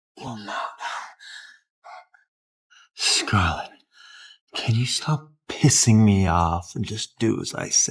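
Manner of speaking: put-on boozy, loose, had-too-many drunk delivery. A drunk man speaking to scarlett in a drama: drunk speech. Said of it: "you're drunk".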